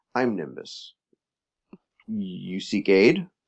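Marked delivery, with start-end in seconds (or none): 0.2-1.0 solemn, earnest, very serious and grave voice. A character suddenly looks out the door and speaks, very serious. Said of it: "he says very seriously".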